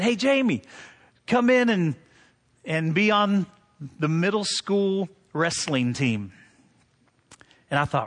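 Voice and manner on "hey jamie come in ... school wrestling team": ordinary talk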